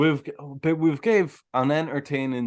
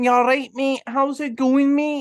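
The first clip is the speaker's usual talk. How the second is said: very high, strong, proper Glaswegian accent; 11 semitones higher, 4 dB louder than usual. Showing how some people in scotland speak: imitating a strong glaswegian accent. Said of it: "proper Glaswegian".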